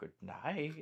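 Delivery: hoarse whisper. As they fall asleep at night, a voice is heard: raspy whisper. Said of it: "you hear a raspy wi voice whisper".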